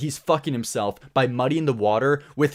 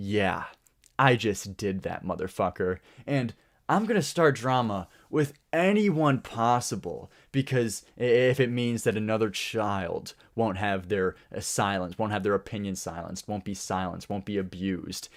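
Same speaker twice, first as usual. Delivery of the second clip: boastful, bragging tone delivered with mockery; 5 semitones lower, 5 dB quieter than usual. Retelling how someone bragged about calling out Corpse: mocking imitation of bragging. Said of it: "come out here bragging like".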